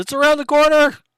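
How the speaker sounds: put-on piercing shout, very high and loud. Recapping a character's warning to the players: imitating a yell. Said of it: "you know he yelled".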